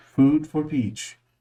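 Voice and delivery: put-on French accent. In a playful roleplay, a character asks for food in a french accent. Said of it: "It's in a French accent".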